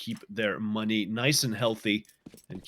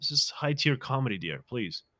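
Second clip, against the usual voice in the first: mock pleading voice, higher pitched; 3 semitones higher than usual. Retelling his reply to a girlfriend: imitating his own pleading reply. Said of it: "And I'm like".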